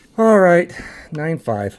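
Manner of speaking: slow, deflated, let-down, disappointed delivery. Announcing a card's result, sounding disappointed. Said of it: "you kind of hear the disappointment in my voice".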